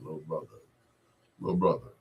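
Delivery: fast, deep, heartfelt voice. Retelling how Blue Lovett walked over and spoke: imitating Blue Lovett's deep voice. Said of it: "with that deep voice of his".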